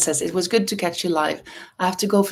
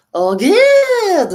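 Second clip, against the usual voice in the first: acted over-the-top cry, very high and very loud; 14 semitones higher, 9 dB louder than usual. Retelling reading a book aloud to a student: overplayed exclamation. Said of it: "And then I overplayed it like".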